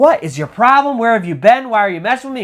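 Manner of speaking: put-on furious yelling. Retelling a friend confronting the missing friend, imitating an angry yell. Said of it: "he starts yelling at Carlos, like".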